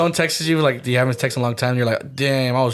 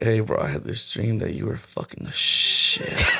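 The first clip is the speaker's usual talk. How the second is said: put-on groggy, barely-awake sleepy voice. Imitating Hans calling a friend: Hans barely waking up voice. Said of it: "his voice of, like, him barely waking up".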